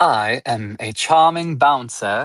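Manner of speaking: put-on slow, slightly too posh generic British accent. Introducing their character, the speaker attempts a generic british accent. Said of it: "for like a generic British accent for me".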